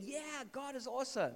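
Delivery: loud, high-pitched, jubilant shout. Speaker describes the apostle dancing and praising god: retelling a shout. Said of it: "And he's shouting".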